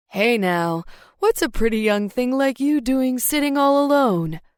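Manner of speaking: slick, smooth, sleazy delivery. A man interrupts the narrator, who is sitting alone, in a smooth, sleazy voice. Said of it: "a smooth, sleazy voice".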